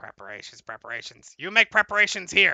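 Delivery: frog-like croaking voice throughout. Voicing a creature to the players during a game, croaking frog-like voice. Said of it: "it starts croaking and it sounds like a frog".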